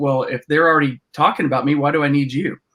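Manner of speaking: normal talking voice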